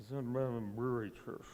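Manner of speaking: toned-down speaking voice. Retelling what a newcomer told him: quieter [name] voice. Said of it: "in his quieter [name] voice".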